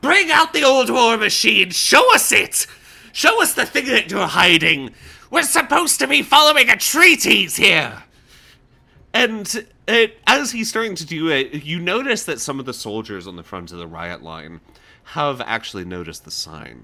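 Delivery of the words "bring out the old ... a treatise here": very loud, high-pitched put-on yelling. Voicing a character yelling demands at a riot line: yelling in character. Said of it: "he will start yelling once again".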